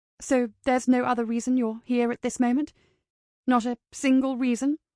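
ordinary delivery

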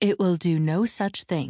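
ordinary delivery

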